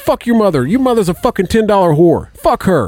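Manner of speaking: high, put-on furious cursing rant. Retelling a phone caller's reaction to faked lost signal: imitating an angry cursing caller.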